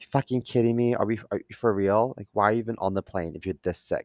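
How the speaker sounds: put-on under-breath mutter. Retelling a plane passenger reacting to the speaker's coughing, mimicking muttering under breath. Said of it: "She under her breath".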